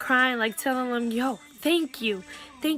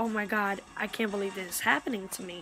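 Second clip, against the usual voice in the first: put-on crying, tearful voice; 4 semitones lower, 6 dB quieter than usual. Retelling seeing the blood after being hit: imitating own past crying. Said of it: "that's when I start crying".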